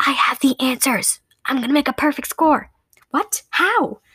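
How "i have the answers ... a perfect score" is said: secretive, confidential stage whisper. Glancing around to be sure they're alone, a girl confides; whispering. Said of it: "Rhonda whispered".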